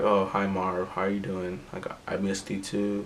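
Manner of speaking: speaking like a zombie. Retelling a character greeting his brother, imitating a zombie-like voice. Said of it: "he's speaking like a zombie".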